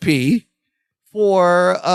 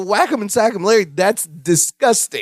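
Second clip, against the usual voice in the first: plain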